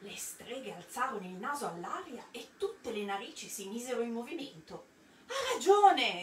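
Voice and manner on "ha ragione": shouting with voice raised high. One of the sniffing witches in the assembly calls out, shouting. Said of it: "Gridò una".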